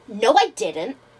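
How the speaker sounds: defensive, on-the-defensive tone. Retelling a customer denying he booked through Expedia, imitating a defensive customer. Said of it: "He was very defensive about it".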